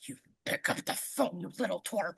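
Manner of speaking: hushed, whispered tough-guy voice. Retelling a movie scene where a character acts tough: imitating Dennis acting tough. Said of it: "Dennis acts tough".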